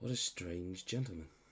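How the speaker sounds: soft, low, hushed half-whisper. Overheard as the gentleman briskly turns away and leaves, half-whispering. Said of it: "you just hear like in whispers".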